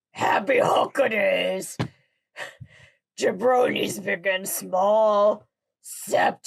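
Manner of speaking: put-on character voice, drawing out "small". Told to go for it though unsure you will ever be ready, try a Hulk voice. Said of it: "I will try and do it in a Hulk voice".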